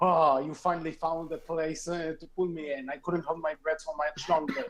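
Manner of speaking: ordinary talk, nothing marked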